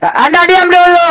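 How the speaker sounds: high loud shouting. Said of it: "Kenapa sih sampai teriak-teriak begitu".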